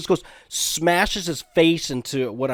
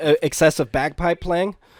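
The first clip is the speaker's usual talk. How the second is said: plain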